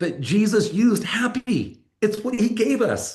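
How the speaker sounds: high, loud, emphatic, lifted proclaiming.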